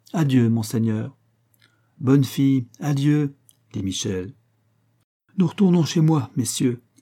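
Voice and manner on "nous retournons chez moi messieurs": high, quick cry, calling out. A courtesan leading her boat procession addresses the gentlemen, calling out. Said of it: "cria la Dolphina".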